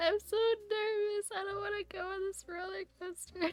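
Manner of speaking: imitated crying, tearful voice. Retelling being in line for a roller coaster, imitating own past crying. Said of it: "why are you crying?".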